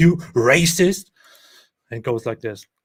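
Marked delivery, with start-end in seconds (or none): 0.0-1.1 loud mock outraged yell. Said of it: "We need a president who says".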